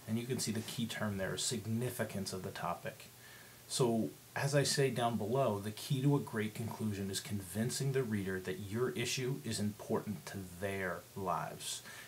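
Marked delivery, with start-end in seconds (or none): 9.4-11.8 their stressed within a slow phrase. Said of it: "I placed emphasis on the word "their"".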